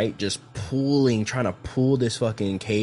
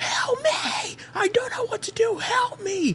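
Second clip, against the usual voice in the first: shrill, very high-pitched pleading scream. Recounting a sister calling their mom, retelling her scream for help. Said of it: "My sister called her and was screaming".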